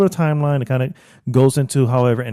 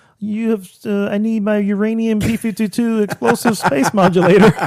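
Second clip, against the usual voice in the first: strange alien voice; 7 semitones higher than usual. Talking about a movie with a friend, imitating the Martians' weird voice. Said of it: "they have this weird voice when they go".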